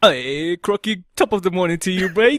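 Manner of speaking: put-on posh English accent. Greeting Crocky right after announcing you'll sound like an English gentleman. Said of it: "gonna sound like an English gentleman".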